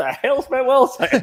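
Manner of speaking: high, slow, baffled and confused.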